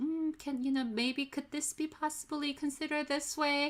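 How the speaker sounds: timid, high, hedging delivery.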